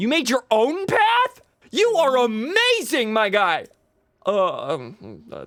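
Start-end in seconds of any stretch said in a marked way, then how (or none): 0.0-3.7 very high, thrilled, drawn-out, swooping yell. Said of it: "sorry for shouting".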